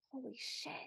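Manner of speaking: mock whisper through gritted teeth. Retelling how a woman at the party reacted amid the applause: whisper through gritted teeth. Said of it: "through gritted teeth, she just kind of whispers under her breath".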